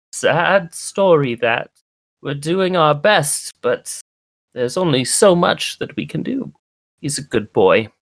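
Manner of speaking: put-on high, elderly mouse villager voice. Voicing an elderly mouse folk who speaks of a boy: elderly mouse folk voice. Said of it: "this elderly mouse folk".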